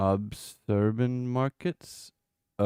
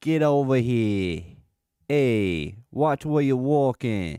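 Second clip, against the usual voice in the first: New England accent, loud; 3 semitones higher, 5 dB louder than usual. Answering their own accent question, the speaker replies in a new england accent. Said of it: "Have a New England accent?".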